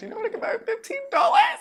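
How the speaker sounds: play-acted angry rant, very high, loud, voice cracking. Describing own comical anger, retelling own rant with voice cracks. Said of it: "because like my voice cracks".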